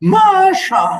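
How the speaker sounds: empty-sounding voice. Reading a story aloud, voicing a husband calling his wife: hollow voice. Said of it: "this is my hollow".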